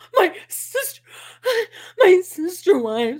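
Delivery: very slow, high, gasping, hyperventilating fake sobbing. Showing how easy it is to fake-cry like Robin: imitating Robin hyperventilating crying. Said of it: "You just have to sound like you're hyperventilating".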